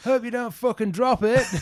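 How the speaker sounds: put-on loud, very high, thick broad Salford accent. Retelling a fan heckling from behind the posts: imitating a thick Salford accent. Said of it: "thick, um, you know, Salford accent".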